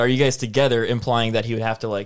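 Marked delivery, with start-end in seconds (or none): none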